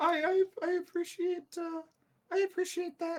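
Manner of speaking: put-on acted sniffling, tearful. Voicing a sniffling woman thanking a visitor for an apology: acted sniffling. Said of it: "she very much just sniffles and just says".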